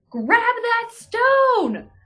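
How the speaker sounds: in-character high, loud shout, stone drawn out. Calling to Axray in the game to grab the stone: yelling in character. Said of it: "I'm going to fucking yell to Axray".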